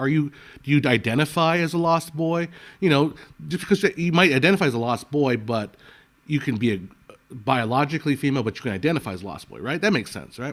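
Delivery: ordinary talk, nothing marked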